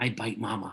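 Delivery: hushed, secretive, confiding, conspiratorial aside. Retelling a daughter's line to her doll: imitating a conspiratorial half-whisper. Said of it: "in a conspiratorial whisper".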